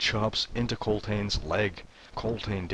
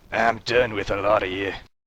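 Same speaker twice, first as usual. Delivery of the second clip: grumbly, grumbling voice, getting louder; 6 dB louder than usual. The duergar waves off Krand and walks away up the steps, grumbling.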